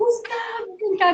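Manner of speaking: put-on shouting. Retelling calling the husband when the child choked: retelling own yell for help. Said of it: "E eu comecei a gritar".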